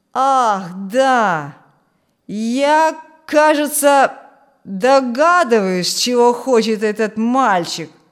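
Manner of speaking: loud, drawn-out, taunting, derisive tone. A narrator reads Willy answering his brother Frank, in a mocking tone. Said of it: "Насмешливым тоном сказал Вилли".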